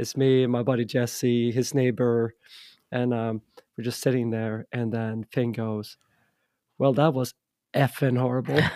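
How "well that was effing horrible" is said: put-on angry voice, faster pace. Sitting with his buddy after a show, the speaker recalls Finn, imitating Finn's angry remark. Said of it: "He's so pissed off".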